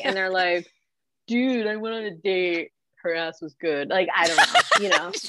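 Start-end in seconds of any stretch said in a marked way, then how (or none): 1.3-5.1 casual dude-bro guy voice. Acting out how men on a male reality cast answer, impression of a guy. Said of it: "That's my impression of a guy".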